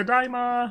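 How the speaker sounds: very high squeaky frog voice. Answering a viewer's redeem, practicing a Kermit the Frog voice. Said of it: "And another Kermit comes by".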